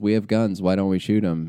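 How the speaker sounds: normal talking voice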